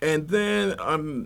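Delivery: slow, halting delivery.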